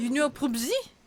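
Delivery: thick, badly put-on, butchered French accent. Quoting a woman with the thickest French accent: bad French accent. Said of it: "sorry for butchering the French accent".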